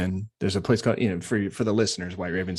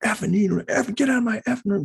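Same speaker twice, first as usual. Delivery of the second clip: mock scream, higher; 3 dB louder than usual. Retelling how a patient reacted to visitors: imitating a patient screaming. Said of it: "just screaming at us".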